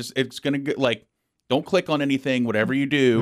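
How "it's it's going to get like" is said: plain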